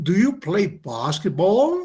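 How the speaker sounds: pitch rises on the word basketball. Teaching english yes/no questions, rising intonation on basketball. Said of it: "Eso es, la entonación sube".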